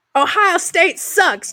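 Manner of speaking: put-on Western Pennsylvania Pittsburgh accent, pitched very high. Retelling a coach's rally line in a yinzer accent: imitating a yinzer accent. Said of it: "he has the yinzery-ass ass accent".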